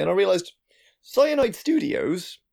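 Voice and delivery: voice breaking into a very high squeak. Talking about upcoming games with another speaker, voice cracking. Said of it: "I don't know why my voice cracked there".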